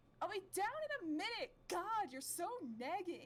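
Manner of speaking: shouting rudely. Acting a teen answering the stepmother's dinner call: yelling back rudely. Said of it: "I yelled kindly back down to her".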